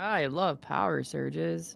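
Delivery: sarcastic, very slow, very drawn-out drawl. Reacting to news of a power surge: sarcastic. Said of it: "I say sarcastically".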